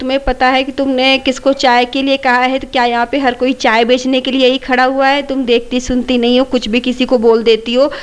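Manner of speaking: plain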